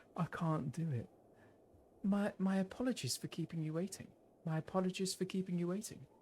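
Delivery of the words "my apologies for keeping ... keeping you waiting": put-on breathy voice. Trying to do Beth's voice for a line: imitating Beth's breathy voice. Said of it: "I've got to do Beth's voice".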